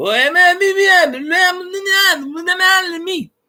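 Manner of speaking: put-on Cajun French accent, pitched way up, drawn out. Joking about what to say to another streamer: mock cajun french talk. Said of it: "I'm just gonna start talking Cajun French on him".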